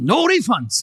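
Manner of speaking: put-on Korean accent. Retelling how a father answered the man marrying his daughter, imitating a Korean accent. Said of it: "what's your Korean accent?".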